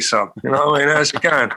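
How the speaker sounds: full-on, proper London Cockney accent. Asked about adapting to clients, the speaker demonstrates; Cockney accent. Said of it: "you probably go proper Cockney".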